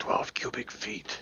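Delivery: close, very hushed, secretive leaning-in whisper. Leaning in to answer a question about pocket space, whispering. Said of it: "lean in and whisper".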